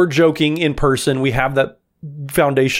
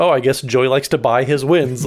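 normal talking voice

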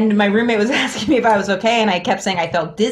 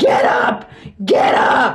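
put-on, very slow, dragged-out half-yell; 3 semitones higher than usual. Retelling waking up too hot, imitating someone yelling. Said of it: "yelling at me".

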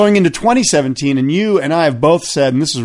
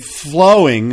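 the word flowing said with stress. Talking about a favourite surfer's technique, with stress on flowing. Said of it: "and I emphasize the word flowing".

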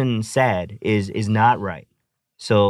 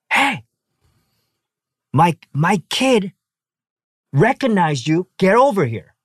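put-on brash, pitched-up old lady yell; 9 semitones higher than usual. Retelling how a grandma spoke to a child: imitating a grandma yelling. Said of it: "straight up started yelling at Haru".

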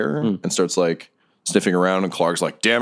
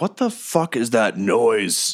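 slow goblin voice, drawn out slowly; 3 semitones higher than usual. Voicing Clark, a goblin boss, hearing a noise: voicing Clark the goblin boss. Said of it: "Clark starts looking around. He's like".

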